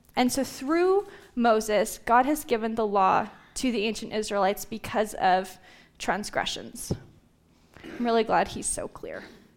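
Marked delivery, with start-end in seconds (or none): 7.9-9.3 breathy, whispered, dry sarcastic irony. Reading a confusing Bible passage, then commenting on it: sarcastic. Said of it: "It's a little sarcasm".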